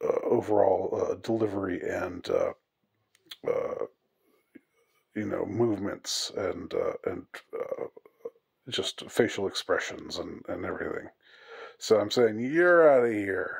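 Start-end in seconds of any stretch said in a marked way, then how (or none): 12.4-13.6 furious, enraged yell. Playing an angry umpire calling foul on word misuse: mock angry umpire yelling. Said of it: "my face is contorted with rage".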